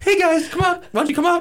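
very high, sweet, gentle, wheedling coaxing tone. Recalling the boss calling to birds inside the house: soft voice imitating Dancing Bobby B. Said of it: "like a soft voice".

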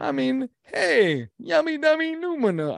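very high, bad old-timey New York accent. Joking about watching a musical on Broadway, in a bad old-timey New Yorker accent. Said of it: "I can't even talk like an old-timey New Yorker".

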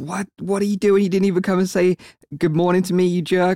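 cross, put-on screaming cry. Retelling how a girlfriend burst in and screamed at him: imitating someone screaming. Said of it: "she burst into the room and screamed at him".

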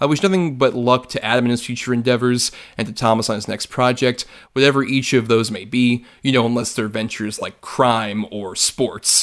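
ordinary talk, nothing marked

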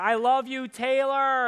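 loud, high, very slow, stretched-out scream. Acting out a scene he says he didn't do at the Eiffel Tower: mock screaming. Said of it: "jump up and start screaming".

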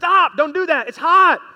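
shrill, very loud, very high-pitched shout. Acting out a parent, child near the stove, shouting. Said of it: "You're shouting".

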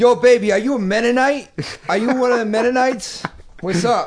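very high, loud catcalling holler. Imagining a guy yelling from a garbage truck window at a girl: Puerto Rican guy catcalling. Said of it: "Puerto Rican guy in a garbage truck about to yell out the window".

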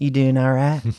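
mocking, sleazy, flirty put-on voice. Retelling how a store clerk greeted a customer: imitating a sleazy flirty clerk. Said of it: "he's like all Leisure Suit Larry type sleazy".

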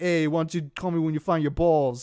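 put-on slightly heavier New York accent. Recapping a scene and quoting a character's line, turned-up New York accent. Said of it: "he turns up his New York accent".

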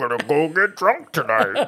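put-on high, drawn-out, teasing mocking voice. Showing how wives make fun of husbands: mocking impression of a husband. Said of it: "you tuck your chin".

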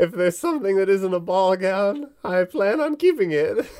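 put-on old woman voice, very high. Homeowner giving the adventurers instructions about her stored items, old lady voice. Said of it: "Where she's like a straight up plump, rounded old woman. She's got warts and stuff. / Where she's like a straight up plump, rounded old woman. She's got warts and stuff. / It was old lady voice. / (op".

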